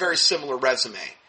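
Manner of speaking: normal talking voice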